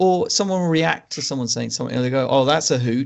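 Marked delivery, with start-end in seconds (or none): 2.3-3.1 mock sarcastic delivery. Quoting a film's unconvincing dialogue: imitating a sarcastic line.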